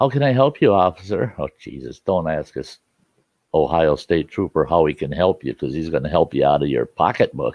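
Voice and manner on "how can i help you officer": mock courteous, respectful, deferential polite tone. Retelling the driver greeting a state trooper: imitating a polite tone. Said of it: "trying to be polite".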